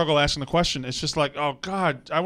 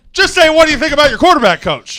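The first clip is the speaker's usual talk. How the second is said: very loud, insistent, hammering yell; 10 semitones higher, 13 dB louder than usual. A sideline reporter presses the coach for an answer about his quarterback, yelling. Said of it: "I don't know why you're yelling at me".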